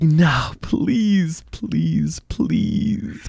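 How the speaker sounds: desperate high pleading sinking to a whisper.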